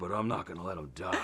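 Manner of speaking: very low, grunty mutter under the breath. Saying the line after being asked to say haircut: Mick Rory impression. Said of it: "the Mick Rory impression".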